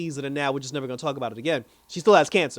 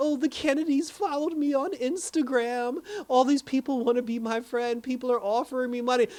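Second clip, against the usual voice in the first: whiny, half-crying complaint; 9 semitones higher than usual. Retelling what a woman told him while he listened, imitating her crying and complaining. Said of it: "she's like crying and complaining".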